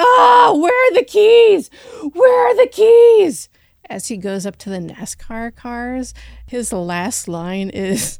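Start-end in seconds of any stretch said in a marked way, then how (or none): 0.0-3.5 piercing, very high, very loud shriek. Describing a movie shot where a guy is screaming, imitating someone screaming. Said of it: "this guy screaming".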